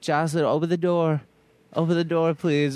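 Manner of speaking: high pleading voice. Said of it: "he's like".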